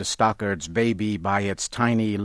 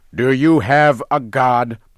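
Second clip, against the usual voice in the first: very loud shouted voice; 4 semitones higher, 8 dB louder than usual. Narrating, a man shouts a question at another man as a warrior lifts a spear. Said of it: "Baptiste shouted".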